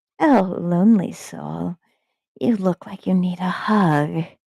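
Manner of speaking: whisper mimicking a human voice. A creature addresses a lone person, whisper mimicking a human voice. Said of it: "whispered in a mockery of a human voice".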